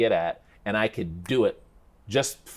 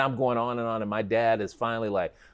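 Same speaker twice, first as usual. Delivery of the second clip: ordinary delivery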